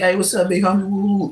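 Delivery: plain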